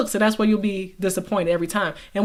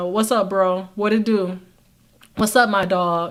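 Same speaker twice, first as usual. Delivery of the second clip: put-on casual, relaxed slangy delivery, slower. Speaker acts out switching from a proper voice to greeting a buddy, put-on casual slangy greeting. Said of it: "Jermaine come by".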